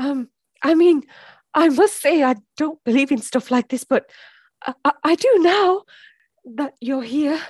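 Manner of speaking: nervous, anxious, on edge. Playing a podcast host interviewing a dead guest, sounding nervous. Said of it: "Sorry, I'm just nervous".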